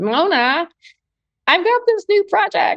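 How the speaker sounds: put-on Long Island accent. Retelling what a woman said to you in the elevator, imitating an incredible Long Island accent. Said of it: "in her incredible, like, Long Island accent".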